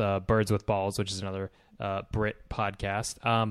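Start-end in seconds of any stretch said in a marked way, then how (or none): none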